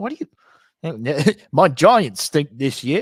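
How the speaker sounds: put-on English accent. Speaker quotes a cousin who is a giants fan; imitating cousin's english accent. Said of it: "he's English".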